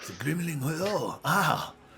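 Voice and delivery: very drawn-out, slow, high-pitched French accent. Showing how people say a word with an accent: French accent. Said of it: "say it with uh, an accent. It's got French".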